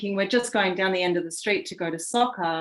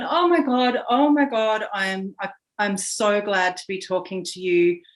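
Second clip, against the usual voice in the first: put-on, mock-distraught voice, slower; 2 semitones higher, 4 dB louder than usual. Retelling a neighbor ringing at three in the morning, imitating a distraught neighbor. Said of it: "absolutely distraught".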